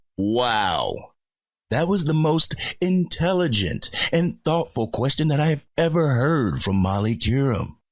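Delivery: thick sarcasm, high, long stretched-out wow. Reacting to a question asked on the segment: sarcastic tone. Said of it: "hear the sarcasm in my voice".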